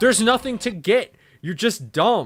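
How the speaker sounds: put-on furious, angry outburst. Retelling a dream argument with a pizzeria manager: retelling own angry outburst. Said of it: "I was so angry".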